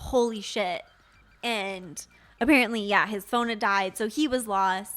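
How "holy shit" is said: relieved, exclaiming outburst. Retelling what a lost man said on seeing them: imitating a relieved exclamation. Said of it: "a very relieved".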